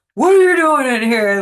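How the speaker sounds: very loud, high-pitched drill-sergeant shout. Retelling catching someone in the house after waking from a nap; drill sergeant voice. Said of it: "with my like drill sergeant voice".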